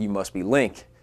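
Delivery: put-on booming voice. Retelling how someone at the baseball field greeted the speaker: imitating a big voice. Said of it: "this big voice comes like".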